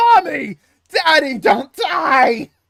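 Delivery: high, loud, drawn-out, freaked-out wailing panic scream. Retelling Peter seeing his parents' graves and running out, retelling Peter screaming in panic. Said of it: "he's screaming that all over New York".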